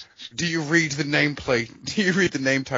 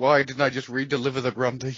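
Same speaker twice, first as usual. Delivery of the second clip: plain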